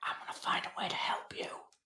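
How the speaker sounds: hushed whisper in a character voice. Hugging another character goodbye and promising to help: whispering in character. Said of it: "he's gonna whisper to him".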